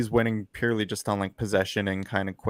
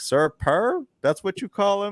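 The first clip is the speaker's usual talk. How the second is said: very high, heavy, thick Southern drawl; 11 semitones higher than usual. Retelling a coach's sideline question about a mascot, thick Southern accent. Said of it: "this thick Southern accent".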